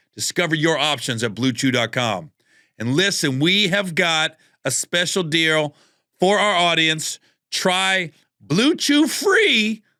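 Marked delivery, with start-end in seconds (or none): 7.5-9.8 voice cracking and breaking, stretched out very slowly. Host reading a sponsor ad with a special deal for the audience; voice cracking. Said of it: "My voice cracked".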